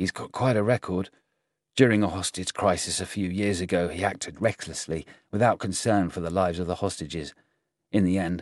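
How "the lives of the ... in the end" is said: plain reading voice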